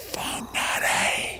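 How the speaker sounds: hushed, quiet whisper. Keeping a place name covered over, the speaker says whispered Whangarei. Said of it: "I'm going to whisper it".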